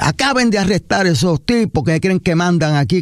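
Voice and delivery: high furious mock yell.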